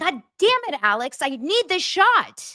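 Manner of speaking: high, slow, angry yell.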